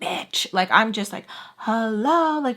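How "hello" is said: mock insistent, demanding, impatient hello. Retelling an impatient phone call: imitating own loud shout. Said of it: "really, really loud".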